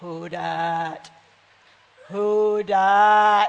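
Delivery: very deep, very slow voice stretching "dat". Retelling hearing a voice outside while lying in bed, in a deep, deep voice. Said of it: "this deep, deep voice right out somewhere and going".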